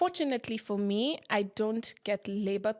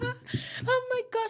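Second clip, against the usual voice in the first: very high voice, words breaking into laughter; 14 semitones higher than usual. Retelling walking into the sitting room where he watched TV, retelling laughing while talking. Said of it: "I was laughing".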